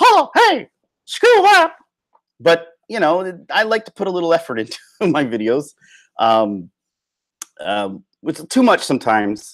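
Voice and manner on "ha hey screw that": squeaked out at the very top of range. Showing the silly voices he could do in videos: Mickey Mouse voice. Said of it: "or Mickey Mouse".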